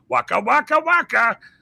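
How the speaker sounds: very high, loud, put-on puppet voice. Describing someone's natural voice, demonstrating it in Fozzie Bear voice. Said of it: "his natural voice sounds just like this".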